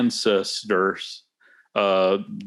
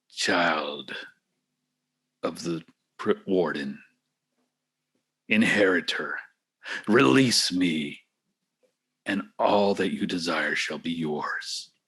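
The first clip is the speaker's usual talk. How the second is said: slow telepathic voice, as if inside the head; 3 semitones lower, 4 dB quieter than usual. Game master voicing what a player hears on touching it, voice in your head. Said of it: "You hear the voice in your head the second you touch it. / You hear the voice in your head the second you touch it".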